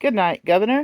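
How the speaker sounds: bright, cheerful, cheery voice. Narrator reads the rider calling out at a cab stand, in a cheery voice. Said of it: "in a cheery voice".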